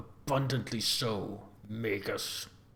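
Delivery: grudging mutter through clenched, gritted teeth. Narrator voicing the governor answering the Magus, muttered through gritted teeth. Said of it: "mutters through gritted teeth".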